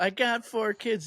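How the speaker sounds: high-pitched female yelling. Retelling how a woman in the crowd called out: imitating a woman yelling. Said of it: "she yelled out".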